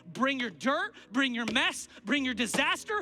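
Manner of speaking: rising, excited preaching.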